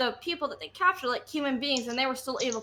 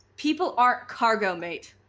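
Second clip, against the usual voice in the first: put-on pirate accent laid on as thick as possible; 4 dB louder than usual. Telling a slaver to his face, pointing at his nose: most piratish accent possible. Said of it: "in the most piratish accent I can".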